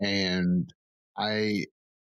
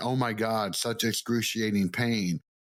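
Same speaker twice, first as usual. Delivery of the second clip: usual speaking voice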